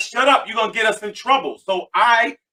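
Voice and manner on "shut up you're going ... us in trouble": plain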